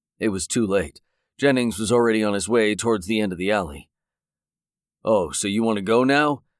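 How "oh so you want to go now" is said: snide, cutting, sniping tone. A man calls back over his shoulder to his companion, sniping. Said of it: "Jennings sniped over his shoulder".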